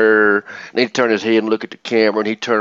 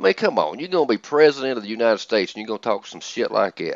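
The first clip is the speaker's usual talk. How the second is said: normal talking voice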